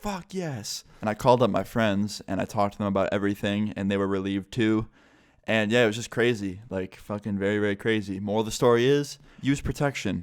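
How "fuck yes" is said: acted, very loud, high shrieking scream. Retelling hanging up the phone and letting out a scream, imitating own past scream. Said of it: "I let out the biggest scream".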